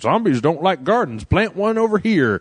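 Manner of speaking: silly, high, weird, dopey, dim-witted farmer voice. Describing a game intro, speaker imitates a weird-looking farmer guy, weird stupid voice. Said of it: "talking in a weird, stupid voice".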